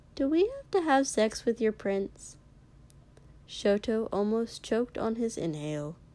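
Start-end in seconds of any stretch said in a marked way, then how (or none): 0.2-2.4 deeply puzzled, very quizzical, swooping high tone. After a long silence, a companion suddenly asks, unprompted, very quizzically. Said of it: "Kiri said very quizzically with no prompting".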